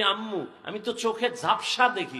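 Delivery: ordinary talk, nothing marked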